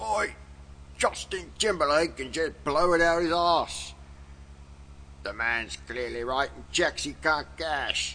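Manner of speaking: put-on British-accented voice. Reading out a quoted remark in a British accent. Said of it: "saying in a British accent".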